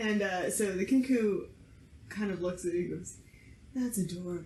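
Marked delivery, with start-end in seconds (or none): 3.7-4.4 low, smooth, silky soft, gentle male voice. The Kinku looks at what ran up to it and reacts, in a silky, soft male voice. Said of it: "silky, soft male voice".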